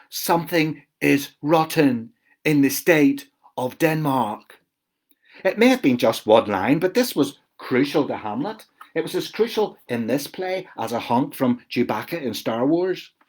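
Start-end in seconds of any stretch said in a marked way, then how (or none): 0.1-4.5 put-on slow, deliberate stage reading, Belfast accent smoothed away. Retelling practising a line from the play: carefully avoiding Belfast accent. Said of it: "being careful not to say rotten as rotten in my Belfast accent".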